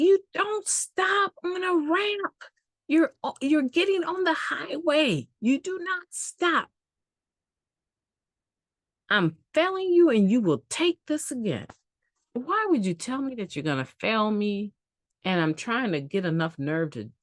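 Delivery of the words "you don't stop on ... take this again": acted, very high-pitched, scolding yell. Retelling what the driving examiner said when failing the test: imitating an instructor yelling. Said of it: "I can remember him yelling at me".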